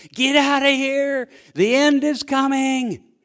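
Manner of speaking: loud high-pitched holler. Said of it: "I stand on the deck and I holler out".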